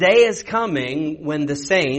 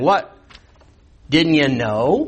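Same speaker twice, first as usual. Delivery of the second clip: sarcastic delivery. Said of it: "This, this is all sarcastic".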